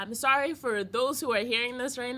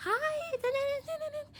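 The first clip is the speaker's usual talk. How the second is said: put-on very high, squeaky, childlike voice. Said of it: "a high-pitched, like, childlike voice".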